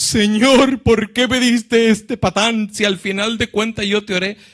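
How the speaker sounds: high, loud, tearful crying voice.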